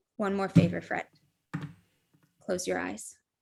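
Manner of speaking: very quiet, hushed tone. Frey kneels before an old man and speaks to Bridget: very low voice. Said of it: "she's gonna say in a like very low voice".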